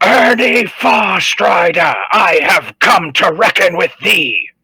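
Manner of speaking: very high, loud, full-lunged battle cry. A player's character, after finding his place of zen, yells a challenge. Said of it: "and yell".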